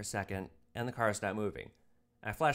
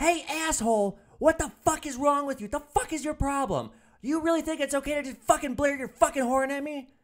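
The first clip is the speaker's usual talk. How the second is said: very loud, shrill, angry screaming; 8 dB louder than usual. Retelling how a pissed-off woman came to the car window, imitating her yelling. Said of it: "she's like yelling at me".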